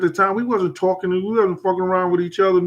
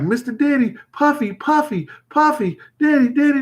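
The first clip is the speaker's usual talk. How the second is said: high-pitched, repeated fan shrieking; 7 semitones higher than usual. Retelling a girl backstage calling to get through: imitating a girl screaming. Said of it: "just screaming like that".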